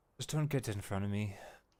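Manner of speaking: soft, words carried out on a sigh. Storyteller voices Esmeralda as shambling figures approach, sighing Esmeralda voice. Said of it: "Esmeralda just sighs and just says".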